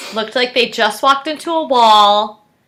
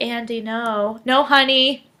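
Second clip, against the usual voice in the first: mock patronizing, soft, slow condescending voice; 6 dB quieter than usual. Imitating how he talks down to Andy: mock-condescending. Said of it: "And in a condescending way".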